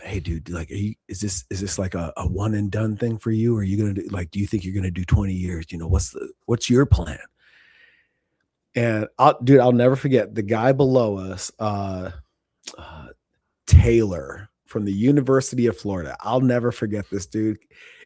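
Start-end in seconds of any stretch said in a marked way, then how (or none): 0.0-7.2 hushed, low, quiet half-whisper. Retelling a bunkmate's question at night in the rack: imitating someone half-whispering. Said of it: "whispering in the dark".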